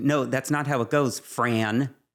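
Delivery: play-acted irritated, pointed tone, loaded with attitude. Retelling how a father talks to the mother: imitating an annoyed father. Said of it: "when he's annoyed ... you can just tell it's the tone".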